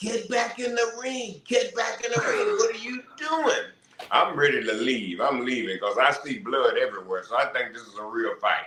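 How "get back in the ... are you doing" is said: mock screaming, shrill and pitched very high. Retelling how the one ringing the bell yelled at the referee: imitating someone yelling. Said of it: "he's yelling and screaming at me".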